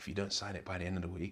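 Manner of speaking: aggressive tone, sweetly delivered. Retelling the manager's threat about the contract: imitating Mickey Adams, smiling but aggressive. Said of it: "it's smiling but aggressive".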